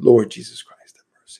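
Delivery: soft, barely-there whisper. Guiding a repeated prayer, not screamed but whispered: whispered. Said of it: "Just a little bit of whisper. ... I'm just doing it so you can hear it".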